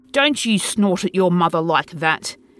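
gruff, authoritative, commanding. Reading the narrator's father rebuking the narrator, gruff and authoritative. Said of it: "said my father gruffly with authority".

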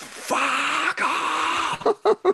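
put-on very high, shrill crowd scream. Retelling how sixty thousand people answered him: imitating a crowd screaming. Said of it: "sixty thousand people screamed".

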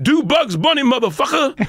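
very high, acted-out shouted yell. Retelling a shout from the crowd at a show: imitating someone yelling.

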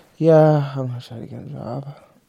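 unenthusiastic. Answering whether they'll try to get a job, sounding unhappy about it. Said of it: "You don't sound happy about it".

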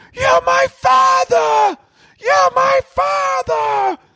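acted, very high, drawn-out, wailing, sobbing scream crying. Retelling a son begging his father, imitating someone scream crying. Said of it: "full crying, losing it".

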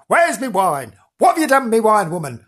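rough hollering. Imagining a man shouting from the cellar, gruff shouting voice. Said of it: "this gruff voice sometimes shouting".

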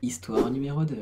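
sweet, syrupy, sugary, honeyed little voice. Announcing the second story, in a sweet honeyed voice. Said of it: "T'as vu cette petite voix mielleuse".

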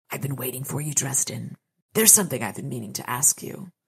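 quick, dry and dusty voice. Narrator reads Mavra's line to Dresden, in a dusty dry voice. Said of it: "Mavra's dress- dusty dry voice".

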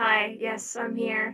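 robotic voice effect. Joining a voice chat with a voice mod still switched on, robot voice changer. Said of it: "Your voice mod is on".

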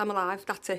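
plain

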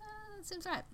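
soft, high-pitched mock voice.

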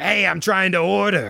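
put-on aggressive, hostile-sounding voice. Acting out someone trying to order, in a mock-aggressive put-on voice. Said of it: "that voice is the sign of aggression".

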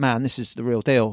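ordinary talk, nothing marked

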